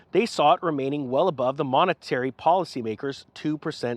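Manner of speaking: plain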